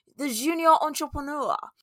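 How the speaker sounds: light French lilt, pitched very high. Repeating a phrase just said, in a slightly french accent. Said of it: "I feel like I have to say that in a slightly French accent".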